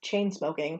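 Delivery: ordinary delivery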